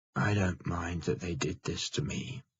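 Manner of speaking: low, quiet voice. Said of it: "He begins in a low voice".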